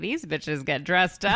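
plain

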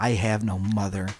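put-on low, flat, bone-dry deadpan delivery. Retelling a story, the speaker voices a reply to a mother: acting out a deadpan line. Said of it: "I just imagined the most deadpan expression".

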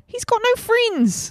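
high, slow New Zealand accent. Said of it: "New Zealand?".

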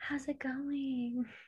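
weird, odd, very soft, very quiet whisper. Greeting the co-host at the start of the episode: weird whisper. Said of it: "why do you always do a weird whisper thing".

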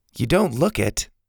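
plain reading voice

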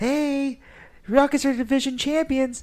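high, loud, excited mock yell.

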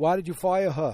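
put-on, attempted New York accent. Quoting a woman asking why someone was fired: New York accent. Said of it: "I'm trying to do my New York accent".

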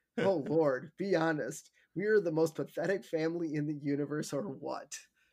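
plain

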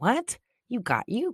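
slow, drawn-out motherly voice. Imitating own scolding of a kid about kids' words: sounding like my mom. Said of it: "I sound like my mom when I'm talking".

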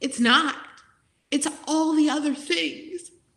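overcome with emotion. A teacher explaining why teachers quit, getting emotional. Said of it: "Sorry, I'm getting emotional".

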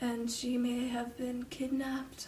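put-on creepy, gloomy, dark storyteller hush. Teasing the other speaker by imitating her delivery, dark and gloomy. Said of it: "It's so dark and gloomy".

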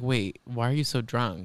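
ordinary delivery

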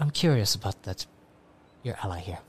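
hushed, confidential, soft half-whisper. Game master voicing a bearded figure leaning over to a player, half-whispering. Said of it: "And he kind of whispers that to you".

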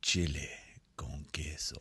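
very soft, slow, drawn-out breathy whisper. Asked to say the dish name again slowly in someone's ear, a slow whisper. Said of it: "Could you say it again slowly, whispered in my ears?".

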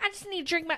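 put-on Houston, Texas accent. Mocking a film character whose accent suddenly appears in the second movie, in a put-on Houston accent. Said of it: "she's all from Houston and trying to go".

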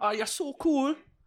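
very high-pitched, soft Jamaican-sounding accent. Saying a positive line in a bit with a partner, the speaker drifts into: jamaican accent. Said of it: "you went Jamaican there".

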